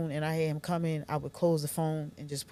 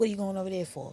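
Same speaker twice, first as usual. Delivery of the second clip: put-on angry outburst, higher; 3 semitones higher than usual. Retelling a partner's reaction to visiting mother: imitating an enraged partner. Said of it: "He would get en-, enraged".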